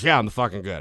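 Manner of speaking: put-on drunken talk. Retelling answering the teacher at school while drunk: imitating own drunk talk. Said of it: "she knew that I was drunk".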